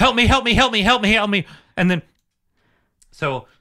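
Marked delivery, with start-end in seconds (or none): 0.0-1.5 fast, frantic, repeated panicked pleading tone. Retelling a bleeding woman's panic attack, imitating her panicked pleading. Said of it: "she proceeds to have a panic attack".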